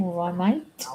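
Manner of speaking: attempted, put-on Australian accent. Trying out an Australian accent after asking about years spent there: attempted Australian accent. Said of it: "you must have talked to Australian".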